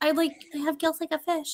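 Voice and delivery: soft voice too faint to hear. Imitating the inaudibly quiet Pitch Perfect girl: imitating the quiet Pitch Perfect girl. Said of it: "you can't hear her".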